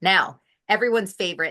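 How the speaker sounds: heavy, laid-on sarcastic tone. Introducing the next step of the program to a guest: very sarcastic. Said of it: "being very sarcastic".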